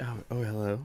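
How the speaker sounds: phone voice switching on. Agreeing that the voice loaded up: imitating Smiley's voice loading up. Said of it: "the voice loaded up".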